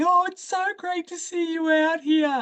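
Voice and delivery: put-on high, condescending, patronizing baby-talk tone. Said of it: "super condescending".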